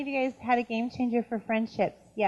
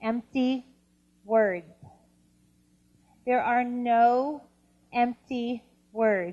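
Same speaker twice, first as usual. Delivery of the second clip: very slow, deliberate, careful, drawn-out no. Stressing a point to the audience, saying it very slowly. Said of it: "I'm gonna say this very slowly".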